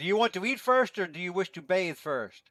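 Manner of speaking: high, loud yelling voice. A game narrator voices Al-Karaki calling to his daughters from the kitchen, yelling. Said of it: "he yells out from the kitchen".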